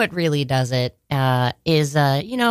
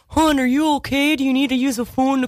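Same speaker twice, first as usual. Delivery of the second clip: put-on Baltimore accent, much higher; 9 semitones higher than usual. Retelling what a nurse said after a drunk-driver crash, in a butchered Baltimore accent. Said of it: "I'm going to probably butcher it".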